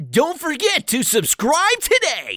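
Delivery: high, loud, swooping put-on advert announcer voice. Joking after a sales pitch for a patron page: put-on sales pitch voice. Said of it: "I like that voice better".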